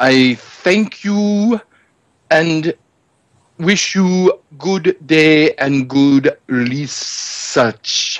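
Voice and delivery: slow, unhurried speech. Voicing a character wishing a visitor good research: talking slow. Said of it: "that man talks slow!".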